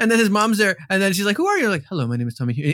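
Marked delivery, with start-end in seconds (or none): 1.9-2.8 put-on robotic voice, lower. Recounting a scene, the speaker acts out a character's self-introduction in robotic Tomohiro voice. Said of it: "And it's robotic".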